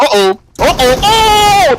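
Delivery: very high excited shouting with swooping pitch. Watching players swap seats, the speaker reacts out loud: shouting. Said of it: "I need to stop shouting".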